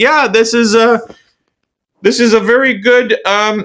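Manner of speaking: mock very high, slow, wooden, stilted read-aloud delivery. Telling a listener about people who talk stiffly in videos, the speaker imitates them as if reading from a script, imitating stiff scripted reading. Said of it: "you can tell they're like almost reading it".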